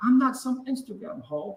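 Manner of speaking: put-on German accent rant. Quoting a woman's Twitter voice message to a co-speaker, in her German accent. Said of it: "with her German accent".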